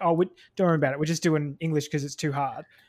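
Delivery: ordinary talk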